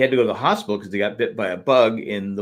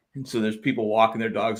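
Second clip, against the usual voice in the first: usual speaking voice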